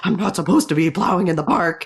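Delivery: put-on upset voice. Retelling a story, the speaker acts out Teddy, imitating Teddy getting upset. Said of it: "And getting all upset about it".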